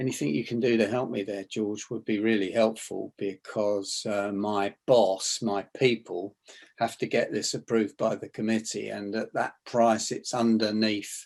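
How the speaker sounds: low soft voice. Asking George for help with a committee approval, dropped, soft voice. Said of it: "as opposed to dropping my voice and just saying".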